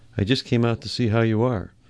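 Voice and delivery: ordinary delivery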